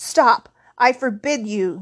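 loud, slow, panicked yelling. An uncle tries to stop a visitor from telling the boy something: panicked yell. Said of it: "yelled Uncle Vernon in a panic".

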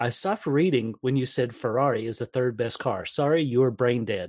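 plain

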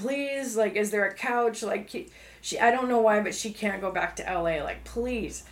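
earnest, pleading, begging tone. Retelling how my dad's girlfriend pleads with them at the office, imitating someone pleading. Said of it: "my dad's girlfriend starts pleading with them".

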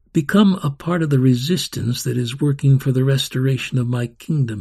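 ordinary delivery

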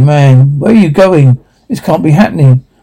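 plain

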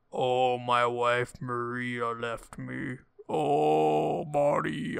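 very slow, drawn-out, miserable groaning moan. Imitating a game's ghost voice acting: imitating groaning game voice acting. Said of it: "groaning kinda sound to their voice".

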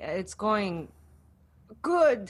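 put-on unsure, hesitating delivery after a pause. Imitating another speaker's delayed answer: imitating a hesitant reply. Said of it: "it took a second for you to say".

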